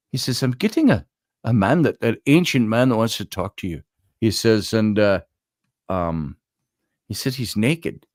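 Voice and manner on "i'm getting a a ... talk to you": put-on Scottish accent. Quoting what a man said about an ancient man: imitated scottish accent. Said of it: "I'm in his Scottish accent".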